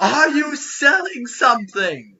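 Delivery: very high, booming, drawn-out woman's bellowing yell. Game narrator voices someone inside a cave calling out to visitors: booming female yell. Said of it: "a booming female voice yell".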